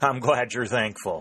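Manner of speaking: said through a laugh. The colonel replies to a saluting officer, laughing. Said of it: "laughed the colonel".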